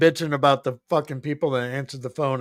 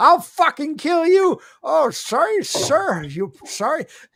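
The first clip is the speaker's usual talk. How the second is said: mock furious complaining rant, higher in pitch; 14 semitones higher than usual. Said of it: "He's bitching at them fucking".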